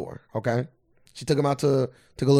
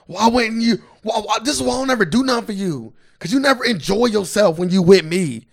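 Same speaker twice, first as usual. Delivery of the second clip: mock heated, high, loud, angry scolding rant; 9 semitones higher, 6 dB louder than usual. Retelling a girlfriend going off on her partner: imitating an angry rant. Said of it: "His girl went off on him".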